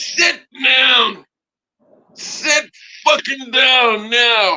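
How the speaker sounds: very slow, high, drawn-out, commanding scream. Retelling how he jumped up at the plane passengers: imitating his own scream. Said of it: "I screamed".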